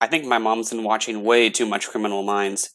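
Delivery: plain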